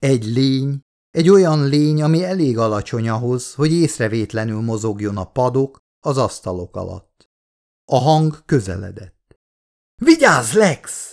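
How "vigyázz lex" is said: urgent, high, screamed alarm. Narrator voicing Miller calling out to Lex as a creature approaches, screamed warning. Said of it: "üvöltött fel Miller".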